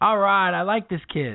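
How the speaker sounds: high, friendly, called-out voice. Retelling how a man yelled back to a kid at a game, retelling a yell. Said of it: "the guy yells back to Wes".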